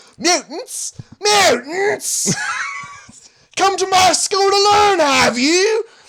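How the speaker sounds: put-on furious, swooping Australian accent at very high pitch. Claiming to be Patrick Stewart: angry Australian accent. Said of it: "Every Australian accent ends up fucking furiously angry".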